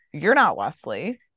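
put-on angry, pissed-off tone. Acting out an imagined scene where a character confronts someone: acting out an angry line. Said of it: "all pissed at Wesley".

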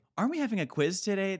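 eager know-it-all voice. Retelling how a classmate always on top of the class reminded about quizzes: imitating an eager know-it-all classmate. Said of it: "he was just Mister like".

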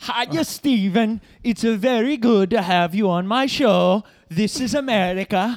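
fake Scandinavian accent, laid on loud. Playing a show host welcoming Steven Seagal as a guest, in a put-on accent coming off Scandinavian. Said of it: "You're coming off Scandinavian or something".

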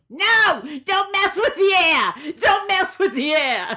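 very high-pitched, shrill, loud, insistent yelling. Recounting the women behind them yelling back at a request, imitating women yelling. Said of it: "started yelling".

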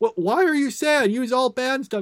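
mock cross, high, angry tone. Recounting a scene where she questions his sadness, mock-angry retort. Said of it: "she's all angry and is like".

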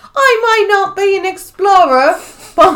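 put-on very high, overdone cockney accent, slightly slurred. Retelling what a drunk Filipino woman said to him, in an overdone cockney accent. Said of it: "It's a little too cockney".

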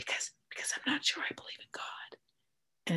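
hushed confessional whisper. Retelling what they said on a phone call: retelling a confessional whisper. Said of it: "i'm whispering on the phone like i'm confessing".

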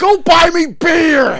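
imitated drunken yelling. Recounting a show argument, quoting the father's demand: imitating a drunk yell. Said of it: "He's just yelling nonsensical drunk horse shit".

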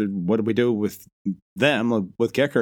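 ordinary talk, nothing marked

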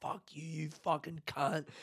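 loud screaming outburst, laughing along. Retelling swearing at a mate across a beer garden: retelling own screaming. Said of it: "I was just screaming it over the beer garden".

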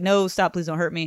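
normal talking voice

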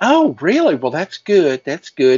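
high, wilting, delicate Southern belle voice. Ambulance worker retelling a woman's reply, in a Southern belle voice. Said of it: "I love how you're doing the voices too".

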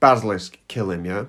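ordinary talk

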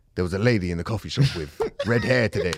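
ordinary, plain speaking voice. Imitating a friend's journal entry: impression of Mike. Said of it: "Is that your impression of Mike?".

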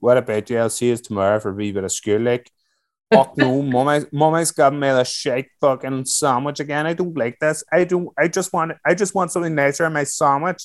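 put-on thick Northern Irish accent. Retelling schooldays in northern ireland with friends: thick northern irish accent. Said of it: "I had a very thick local accent".

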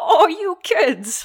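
bad, shrill, high-pitched, loud voice. Acting out a guard from a book scene: Don Knotts voice. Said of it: "That was my Don Knotts".

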